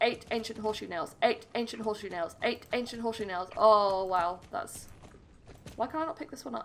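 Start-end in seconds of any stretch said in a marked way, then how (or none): 0.0-3.5 very fast rapid-fire run, said three times. Gamer challenges themself to say an item name repeatedly; very fast tongue twister. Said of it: "How many times can I say it fast?".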